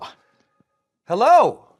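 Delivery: nervous, shrill, high, loud yell, overdone. Nervous about meeting a legendary manager, speaker greets him, yelling. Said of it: "I don't know why I'm yelling".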